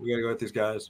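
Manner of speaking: put-on monotone dude bro voice. Mocking an actor who can't deliver a line: monotone Channing Tatum impression. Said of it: "The whole thing is just him going".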